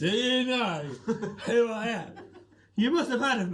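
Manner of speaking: put-on sloppy, high-pitched, drunken slurring. A game narrator voices a drunk man sitting on the stairs, drunken slurring. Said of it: "slurring his words".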